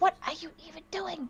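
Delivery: hushed whisper. Playing a character who has just gone over to another: whispering. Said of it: "and just whispers".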